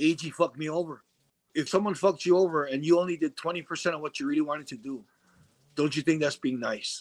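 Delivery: ordinary delivery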